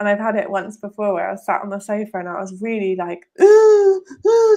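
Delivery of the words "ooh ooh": high, loud gasping for breath. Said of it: "I couldn't breathe for, like, a few minutes".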